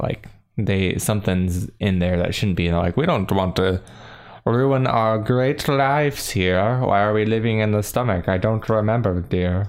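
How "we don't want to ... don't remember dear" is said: put-on posh voice of the idle rich. Improvising a character's complaint during a story scene, rich person's voice. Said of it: "was my rich person's state of voice".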